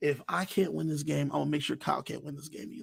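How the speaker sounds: whispered under the breath. Retelling what a player said to himself under his breath, in a whisper. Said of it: "in a whisper".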